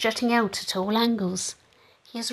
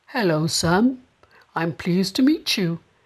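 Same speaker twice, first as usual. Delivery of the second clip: deep, gentle creature voice; 3 semitones lower, 3 dB louder than usual. Reading a story aloud as a stranger greets Sam, in a deep but soft voice. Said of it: "a deep but soft voice said".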